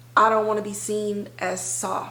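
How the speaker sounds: ordinary talk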